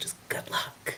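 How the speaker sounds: whispered in a put-on character voice. Voicing a character who leans over to wish the other team luck: whispering in character. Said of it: "and whispers".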